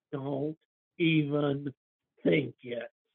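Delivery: quiet, drawn-out hiss under the breath. Voicing a character grabbing another's arm: hissing quietly. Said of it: "hisses out quietly".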